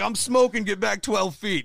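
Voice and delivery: loud, high-pitched barked yell. Retelling how dad yelled at the oxygen tank lady: imitating someone yelling. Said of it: "yelling at this lady".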